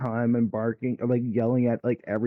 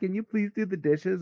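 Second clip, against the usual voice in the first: high, taunting, mocking parroted echo; 8 semitones higher than usual. Acting out a roommate mimicking a request to do the dishes: imitating mocking mimicry. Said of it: "And just mimicking it".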